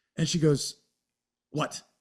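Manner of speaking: normal talking voice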